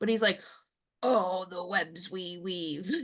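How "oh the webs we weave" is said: guttural voice dragged out very slowly. Asking whether the man being described spoke like this, guttural voice. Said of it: "like I don't want to say guttural like voice".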